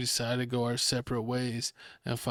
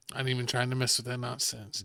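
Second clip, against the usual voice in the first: ordinary talk, nothing marked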